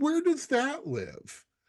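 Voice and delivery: high, incredulous, disbelieving tone.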